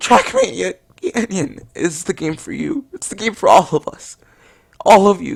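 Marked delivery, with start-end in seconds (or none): 0.0-2.9 tearful, choked-up, crying voice. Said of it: "voice is choking up".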